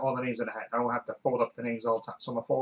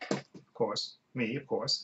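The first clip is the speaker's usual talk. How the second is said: ordinary delivery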